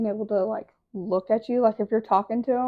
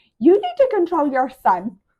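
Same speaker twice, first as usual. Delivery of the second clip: very loud, shrill, swooping scream; 7 semitones higher, 9 dB louder than usual. Retelling what a woman in line yelled at a mother: imitating a woman screaming. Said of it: "I hear her screaming".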